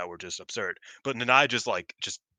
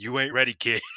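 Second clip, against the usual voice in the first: put-on, acted-out loud yelling; 3 semitones higher than usual. Speaker retells one competitor taunting another after a match, retelling a yelled taunt. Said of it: "Nanai's just yelling".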